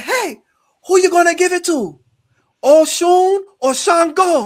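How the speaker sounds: put-on, very high-pitched, loud Jamaican accent. Retelling what a woman asked him while he was dancing: imitating a Jamaican accent. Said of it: "in her like a Jamaican voice".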